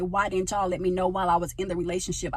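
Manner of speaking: normal talking voice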